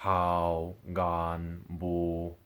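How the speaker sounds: hao, gan, bu each held on a low, level tone. Speaker demonstrates the number 3 tones, voice going lower. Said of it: "my voice had to go lower".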